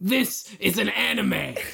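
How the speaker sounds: rough, gritty military tone. Speaker imitates the driving teacher in an anime, in a gritty tone. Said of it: "in like a gritty tone".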